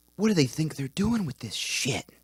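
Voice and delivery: soft-spoken, hushed, soft tone. Retelling what a quiet, soft-spoken guy said, imitating Mike's hushed tone. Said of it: "said shit in this like hushed tone".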